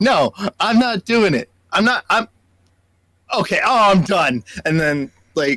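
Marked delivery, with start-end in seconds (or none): 0.0-4.4 very loud, high-pitched yelling. Retelling a drive-thru intercom worker yelling at someone inside: imitating someone yelling loudly. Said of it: "She's yelling really loud".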